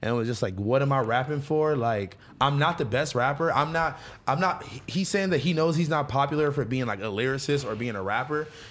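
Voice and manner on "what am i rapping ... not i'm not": ordinary talk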